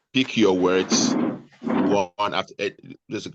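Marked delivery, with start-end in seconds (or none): 0.1-1.1 slow, deliberate, word-by-word delivery. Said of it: "don't try to speak too fast".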